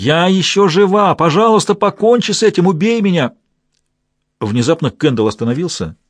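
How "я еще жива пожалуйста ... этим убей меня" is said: high, shrieking, screaming pleading cries. Cries grow louder as the group passes through the grottos; screaming plea. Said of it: "dying woman screams for death".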